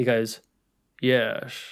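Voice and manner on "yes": creepy, unsettling single word yes. Answering a request to repeat the film line: creepy Sean Connery yes. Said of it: "How does he do it again?".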